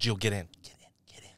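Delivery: re-enacted whisper. Storyteller quoting the man who came back to her car: retelling a whisper. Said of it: "He like whispers to me".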